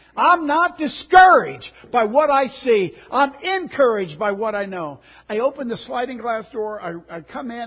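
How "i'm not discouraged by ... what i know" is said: very loud, high-pitched screaming shout. Retelling pacing a deck and yelling to oneself: imitating own past yelling. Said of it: "I was yelling, screaming".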